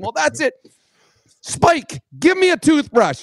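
high, exasperated, fed-up calling out.

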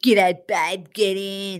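blokey, macho, masculine tradesman voice. Chatting about why tradies appeal, imitating a masculine tradie. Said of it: "And then picking and you up in your ute".

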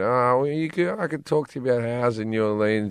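put-on sheepish tone. Retelling a phone call with a manager's suggestion: retelling saying it sheepishly. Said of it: "I said really sheepishly".

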